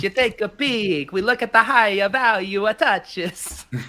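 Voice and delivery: high-pitched, hammed-up, put-on Italian accent. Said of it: "You want me to do it in my Italian accent?".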